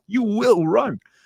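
mock yelling at himself, screamed, very high pitch. Retelling a hard treadmill run, imitating himself screaming. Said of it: "screaming at myself".

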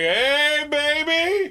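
very high, sleazy, creepy holler. Retelling how a man hollered at a woman: imitating a creepy catcall holler. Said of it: "he hollers at her".

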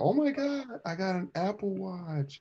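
put-on thrilled gushing, very high and stretched out. Retelling mom's reaction to her new gift: imitating mom's excitement. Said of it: "She got all excited".

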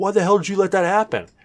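put-on very high, outraged, furious voice. Retelling a player's complaint after his character died: imitating an angry complaint. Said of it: "the guy got all pissed".

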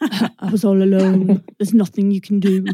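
put-on Scottish accent. Imitating a sad ghost's poetic voiceover from a movie, in a Scottish accent. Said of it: "that's more like Scottish".

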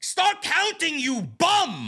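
very high, swooping, barked yell. Recounting MJF yelling at Aubrey while she counts slowly: retelling MJF's yell. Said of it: "And then he yells".

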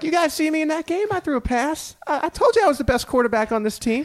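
very high, excited voice, pushed way up. Acting out what Chris Jones would say after the game, Chris Jones impression, high and excited. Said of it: "you have the voice down a little bit".

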